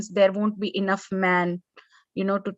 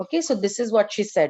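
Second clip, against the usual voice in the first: usual speaking voice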